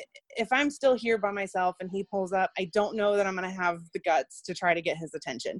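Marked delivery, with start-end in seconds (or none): none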